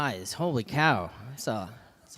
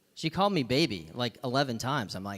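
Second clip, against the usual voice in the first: ordinary talk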